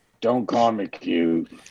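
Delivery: mumbling as if asleep. Playing a character who is carried while asleep, mumbling in sleep. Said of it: "In my sleep, I'm mumbling".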